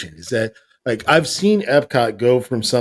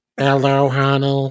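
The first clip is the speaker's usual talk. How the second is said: put-on mechanical robot voice. After the others praise robot voices, you greet someone in a robot voice. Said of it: "I love a good robot voice".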